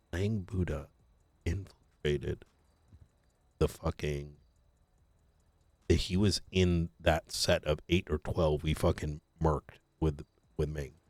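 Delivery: speaking in a whisper. Sharing information for our ears only: whispering. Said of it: "I'm whispering right now".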